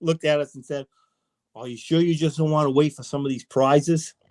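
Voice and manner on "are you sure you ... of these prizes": heavy put-on Boston accent. Quote the banquet speaker answering people sent up for his autograph, in Steve Bedrosian's heavy Boston accent. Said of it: "in that heavy Boston accent".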